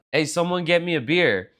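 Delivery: ordinary talk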